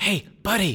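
whispering wind voice. Voicing the wind calling out to a player: whispering wind voice. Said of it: "you feel the wind whisper".

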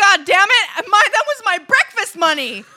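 mock outrage, loud, high, laughing.

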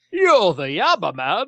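put-on old-fashioned English movie star delivery. Recounting a funny exchange between two strangers, old-time English movie star voice. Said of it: "like old time English movie star voice".

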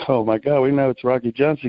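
ordinary talk, nothing marked

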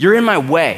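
loud, curt, barked-out delivery. Retelling finding someone reading in the pantry, the speaker re-enacts barking it out. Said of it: "I bark out".

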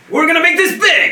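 excited growl, high and very loud. Imitating an actor's character who gets excited: excited John Belushi-style growl. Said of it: "excited and he kinda does a growl".

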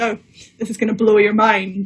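knowing, smug, self-satisfied build-up. Retelling own remark to a friend before showing a piece: imitating own smug remark. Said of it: "really smugly said".

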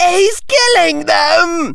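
very high scream. Harry Potter screams out in the Quidditch stadium, screaming. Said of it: "screamed Harry Potter".

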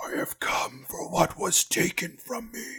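hushed undead whisper in unison, ringing out. Game master voices a lich speaking through creatures in unison, in a lich's whisper. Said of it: "The lich that you heard was you embodied those from the previous Adventure Incorporated. His voice sort of rings out of these creatures. ... it's a whisper".

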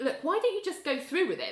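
high, exasperated, pleading tone.

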